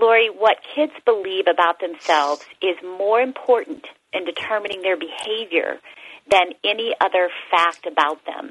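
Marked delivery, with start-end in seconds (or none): none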